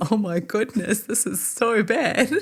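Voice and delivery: acted nervous hysterical laughter through words, drawn out. Retelling own words on seeing a man's leg: retelling own hysterical laughing. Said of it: "I just start laughing hysterically".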